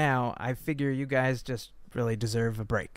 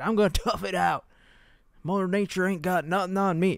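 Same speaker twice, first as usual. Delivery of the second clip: stubborn, high-pitched, dug-in tone; 6 semitones higher, 3 dB louder than usual. Talking about people who decide to stay in Florida, do an impression of a Floridian refusing to leave. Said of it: "that's my impression of a Floridian who doesn't want to leave".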